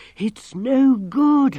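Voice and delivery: high, breathless, out-of-breath wheeze. Struggling to get his breath back, he answers his companion, wheezing. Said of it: "he wheezed".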